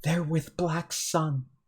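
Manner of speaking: soft, secretive half-whispered aside. In a role-playing game, voicing a character who half-whispers to a player. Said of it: "he whispers like".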